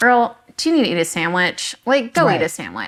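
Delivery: ordinary delivery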